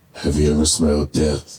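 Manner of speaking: deep, low, put-on screen voice. Retelling how someone asked him a question: Clint Eastwood voice. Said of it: "In a Clint Eastwood voice".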